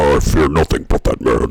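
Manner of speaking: disguised, super deep, very loud voice. Imitating a woman who can magically change her voice, in a super deep voice. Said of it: "Like that, she she can do the like the super deep voice".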